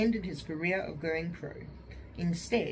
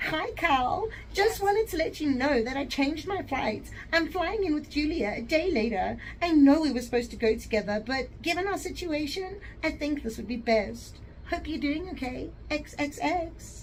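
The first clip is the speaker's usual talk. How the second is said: put-on very high, shrill, loud, catty, snide tone; 9 semitones higher, 6 dB louder than usual. Reading aloud a woman's text message, in a bitchy tone. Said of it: "read this in a bitchy tone".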